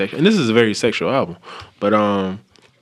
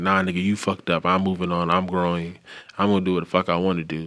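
mock spiteful voice, quieter; 3 semitones lower, 5 dB quieter than usual. Paraphrasing an album's attitude toward a partner: imitating a vindictive tone. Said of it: "vindictive in it".

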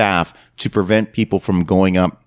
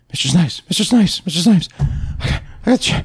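put-on breathless panting, much higher, slower; 11 semitones higher than usual. Retelling catching a man just before he got on the elevator: acting out of breath. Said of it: "I'm completely out of breath".

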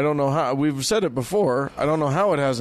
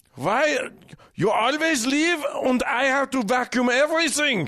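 very high-pitched put-on German accent; 11 semitones higher than usual. Acting out a grumpy Pope complaining about chores: put-on German accent. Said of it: "only mit ein German accent".

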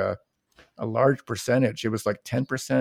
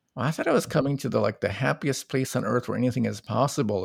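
ordinary talk, nothing marked

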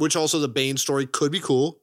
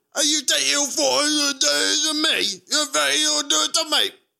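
put-on unconvincing Welsh accent, much higher, slower; 13 semitones higher than usual. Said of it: "I don't think you know how Welsh people sound".

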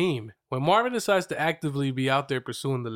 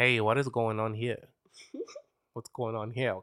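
put-on Puerto Rican accent, lower, quieter; 3 semitones lower, 4 dB quieter than usual. Describing a Puerto Rican man, then trying to do his Puerto Rican accent. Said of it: "I'm going to try to do his accent".

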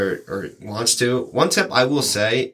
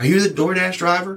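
put-on Southern American accent, pitched up; 7 semitones higher than usual. Retelling what the lady at the door asked the delivery driver, in a Southern accent. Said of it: "she had this like Southern accent".

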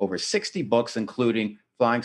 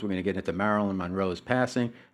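ordinary talk

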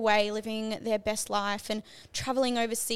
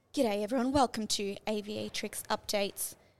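put-on newsreader broadcast voice; 3 dB quieter than usual. Trying out doing the updates in a news reporter voice. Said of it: "in a news reporter voice".

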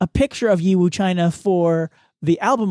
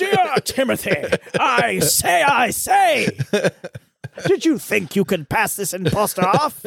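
put-on old colonel voice, very slow drawl; 3 semitones higher than usual. Acting out an imagined listener letter: imitating a Civil War colonel. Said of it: "a colonel from the Civil War that is writing".

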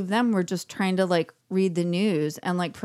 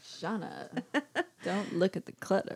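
soft, breathy, soothing near-whisper; 9 dB quieter than usual. Imagining a poster on the wall soothing the speaker: Christopher Walken impression. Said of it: "That didn't sound like him at all".

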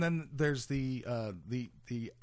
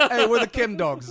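very loud, very high put-on Brooklyn accent; 10 semitones higher, 13 dB louder than usual. Joking that the Chem Dogs are from Brooklyn: put-on Brooklyn accent. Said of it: "I apologize for that accent".

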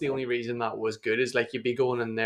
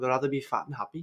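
well-done put-on Liverpool Scouse accent; 2 semitones higher than usual. Imitating a fighter's words: Scouse accent. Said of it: "That's a pretty good English accent".

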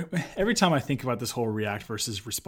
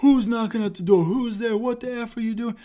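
put-on, very high-pitched, furious yelling; 11 semitones higher than usual. Speaker recounts the man inside yelling after the speaker knocked, imitating angry yelling. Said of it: "this guy's just yelling cuss words".

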